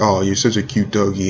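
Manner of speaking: ordinary delivery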